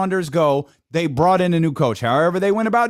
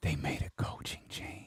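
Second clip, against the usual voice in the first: very soft, hushed, barely audible whisper; 20 dB quieter than usual. Answering a guessing question while a phone call comes in, whispering. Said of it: "Why are you whispering?".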